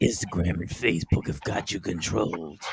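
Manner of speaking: whispered, hushed, breathy dark superhero voice. Lecturing listeners, then switching into a Batman voice. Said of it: "In my Batman voice".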